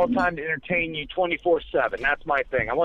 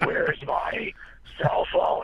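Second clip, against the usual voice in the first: rough, creaky rasp, very slow and drawn out; 4 dB quieter than usual. Retelling trying out the Bat Voice at home: Batman voice. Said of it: "I tried to speak like that".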